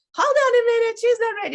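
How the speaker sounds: high, loud announcer voice. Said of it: "And she was like".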